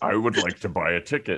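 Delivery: exaggeratedly deepened, extra-deep put-on voice. Picturing a friend leaning down to buy a ticket, in an extra-deep voice. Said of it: "deepening your already deep voice".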